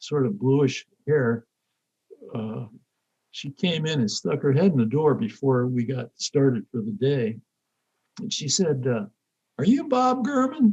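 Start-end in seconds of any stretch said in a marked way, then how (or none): 9.6-10.7 put-on very high voice with thick, strong Southern accent. Retelling an old Southern lady asking at the door, real Southern accent. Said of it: "In this real Southern accent".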